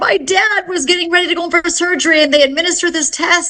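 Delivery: frantic, panicked, bawling sobbing voice. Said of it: "bawling and frantic on the phone".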